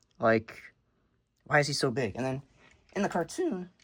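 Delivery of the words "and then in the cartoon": passionate voice cracking suddenly high mid-phrase. A passionate fan talking about the cartoon; voice cracking. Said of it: "crazy voice crack there".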